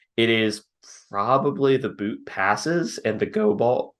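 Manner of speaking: voice breaking partway through. Naming the pass concepts to watch for, voice cracking. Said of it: "not the voice crack".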